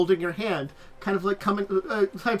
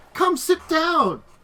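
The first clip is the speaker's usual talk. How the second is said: welcoming motherly voice, high and raised; 8 semitones higher, 5 dB louder than usual. Narrating a room as a voice calls out: voicing the player's mother. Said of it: "you'll hear a voice of".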